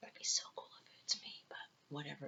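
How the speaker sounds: fast, soft, hopeful whisper.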